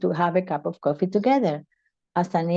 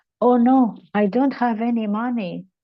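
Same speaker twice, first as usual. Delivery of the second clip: dismayed, let-down, higher, disappointed voice; 5 semitones higher, 3 dB louder than usual. Retelling finding only a few cents in the purse while a woman waits, disappointed.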